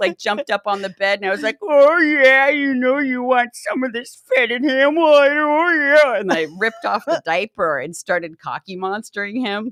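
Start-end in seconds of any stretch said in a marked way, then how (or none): 1.6-6.2 put-on loud, high, belted, horny old-lady voice. Retelling jumping on the bed in an old lady character: pruntang voice. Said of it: "I had on the pruntang wig".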